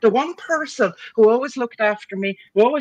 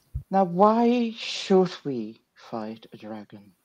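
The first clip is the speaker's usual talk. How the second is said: very, very calm, even, quiet voice; 6 semitones lower, 5 dB quieter than usual. Recounting a story and quoting what she said, retelling her very calm line. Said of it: "very, very calmly she says".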